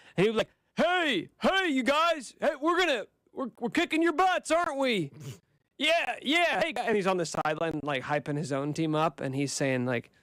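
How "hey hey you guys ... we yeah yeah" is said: put-on high, trash-talking Southern accent voice. Retelling how he talked trash on the sideline, in Trevor Lawrence Southern accent. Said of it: "more of a Southern accent than I realized".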